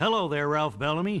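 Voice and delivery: ordinary talk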